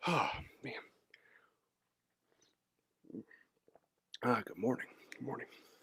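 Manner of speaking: catching breath. Greeting the audience at the start while still catching breath, out of breath. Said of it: "let me catch my breath".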